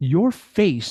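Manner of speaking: put-on halting broken-English accent. Speaker retelling how Habiba behind the counter greeted him, imitating Habiba's broken accent. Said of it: "she's speaking in a broken accent".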